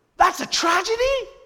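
loud, screechy, high voice. Retelling what John Piper said about a car accident, in a screechy John Piper impression. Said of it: "kind of screechy almost voice".

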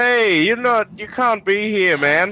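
very high, high-pitched shout. Describing a man who points a rifle at you and shouts back, retelling a guard's shout. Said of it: "and he shouts back".

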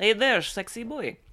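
put-on Dutch accent. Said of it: "it almost sounds Dutch".

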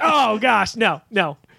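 mock slow, grossed-out, disgusted voice. Retelling how his wife reacts when he mentions the game: imitating a disgusted reaction. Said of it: "she's basically spits".

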